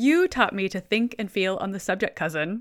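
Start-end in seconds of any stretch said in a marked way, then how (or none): none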